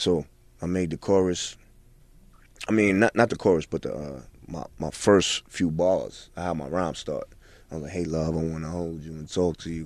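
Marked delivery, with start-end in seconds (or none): 7.9-9.9 put-on almost-whispering delivery, lower and quieter. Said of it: "kinda mimicking even [name]'s, his delivery".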